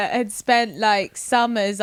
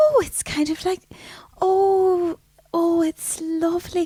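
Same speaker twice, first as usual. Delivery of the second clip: put-on high, lilting, up-and-down Donegal accent.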